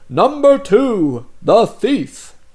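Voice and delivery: loud, high, regal herald-style proclamation. Explaining a game where the king calls out each role; majestic king voice. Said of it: "the king will say in his most majestic voice".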